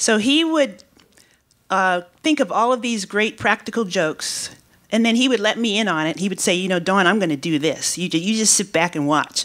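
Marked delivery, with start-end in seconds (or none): 6.5-9.4 imitated Mississippi accent. Retelling a coworker's words about a practical joke: imitating a Mississippi accent. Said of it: "I can't do a Mississippi accent to do it justice".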